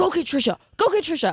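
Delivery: stage whisper half yelled, a whisper-yell. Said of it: "whispering, yelling as we're on air".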